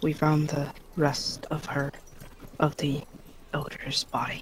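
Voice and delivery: dropped, under-the-breath voice. Voicing a character in a story scene, in a lowered voice. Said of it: "and she'll lower her voice".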